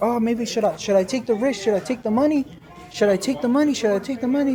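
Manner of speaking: ordinary talk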